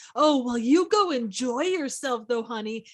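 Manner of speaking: play-acted sarcasm laid on very thick. Retelling how a husband tells his wife to enjoy Vegas: imitating Mister Gibbs' dripping sarcasm. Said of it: "the dripping sarcasm".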